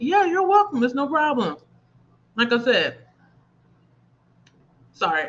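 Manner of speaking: eating while talking, mouth full. Thanking viewers while eating, eating while talking. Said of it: "I'm trying to eat and talk at the same".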